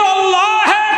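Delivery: anguished, wailing voice.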